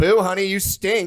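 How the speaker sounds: very loud, very high, shrill, ruthless nasty booing. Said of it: "They can get kind of nasty".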